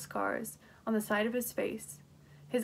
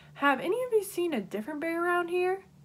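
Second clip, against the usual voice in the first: overly loud, raised voice, pitched high; 8 semitones higher than usual. Narrator reading a character's question to the people in the room: too loud voice. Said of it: "he asked in his too loud voice".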